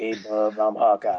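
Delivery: slow, drawn-out, deliberate character voice. Mocking how Hawkeye talked in comics: Wolverine voice. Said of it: "Hawkeye had to talk like fucking Wolverine".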